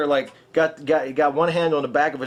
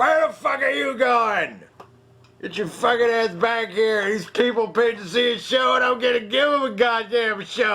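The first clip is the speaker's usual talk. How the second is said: put-on drunk man voice, pitched up; 9 semitones higher than usual. Retelling a stage show, imitating the drunk dad yelling at his family. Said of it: "exactly what he sounded like".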